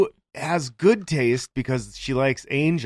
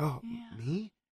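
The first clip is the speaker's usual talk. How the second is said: put-on meek timid voice, much quieter; 7 semitones higher, 16 dB quieter than usual. Mocking how she voices a cartoon girl, imitating a meek voice. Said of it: "she's supposed to sound like meek".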